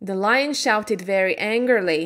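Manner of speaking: ordinary delivery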